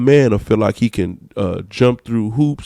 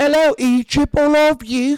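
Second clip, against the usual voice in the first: put-on British accent, higher pitch. Mocking how people would greet Idris Elba: imitating someone doing a British accent. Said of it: "You would do his accent".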